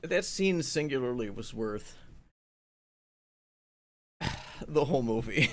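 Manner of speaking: voice getting choked up. Praising a scene in Afterlife, getting choked up. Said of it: "I get a little choked up here".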